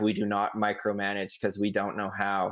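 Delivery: ordinary delivery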